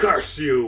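loud, furious, spat out. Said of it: "and Akira's like".

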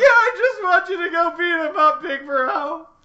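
put-on very high, loud, angry little-child tantrum voice. Retelling what a character said as a kid: imitating an angry little child. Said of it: "being an angry little child and being like".

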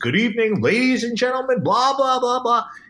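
very high, douchey put-on announcer voice. Explaining trust on a microphone, demonstrating a fake douchey dj voice. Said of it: "you have like that fake voice".

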